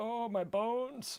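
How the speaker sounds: very high, soft put-on old man voice. Describing a friend's D&D characters, acting out his old man: imitating an old man. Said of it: "or like an old man".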